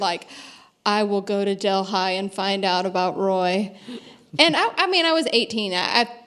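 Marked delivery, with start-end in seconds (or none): none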